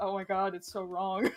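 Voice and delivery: put-on tearful, tight voice. Retelling overhearing a woman on the phone, imitating a choked-up voice. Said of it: "I was like doing the".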